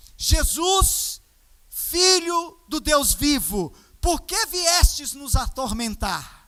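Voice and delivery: yelled, acted-out shout of a possessed man. Retelling a possessed man shouting at Jesus in a synagogue: imitating a shout. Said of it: "ele começa a gritar dessa forma".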